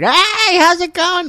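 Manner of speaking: loud, very high-pitched, slow, drawn-out belting. Describing a comedian to friends: imitating Pete Holmes, loud. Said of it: "He's very, like, loud".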